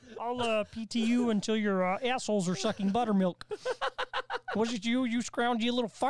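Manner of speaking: high cartoon frog puppet character voice. Doing an insulting tirade as a puppet frog: Kermit the Frog voice. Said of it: "I love the total recall as Kermit".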